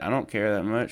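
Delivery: ordinary delivery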